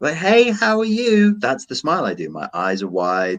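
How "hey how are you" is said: put-on very high, slow, drawn-out baby talk. Speaker shows how he greets his three-year-old nephew, in a baby voice. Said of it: "I do the baby voice".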